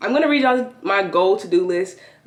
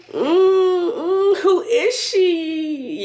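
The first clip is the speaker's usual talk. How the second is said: high, slow put-on excitement. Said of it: "I'm acting excited".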